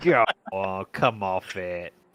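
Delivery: poor, put-on Australian accent. Speaker riffs during banter with friends, doing a poor Australian accent. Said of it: "That's my impression, bro".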